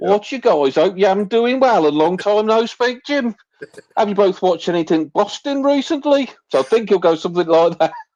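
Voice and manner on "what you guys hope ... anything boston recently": put-on Brummie-style Birmingham accent, pitched up. Guessing how he would greet the hosts, in a birmingham accent. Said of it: "Birmingham way".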